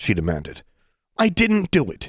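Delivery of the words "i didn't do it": very high, scornful sneer. A man answers the woman who called down to him: sneering. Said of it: "he sneered".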